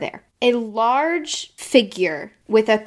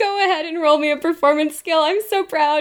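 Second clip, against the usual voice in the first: high-pitched, proud game-master voice. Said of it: "Can you hear my proud D M voice?".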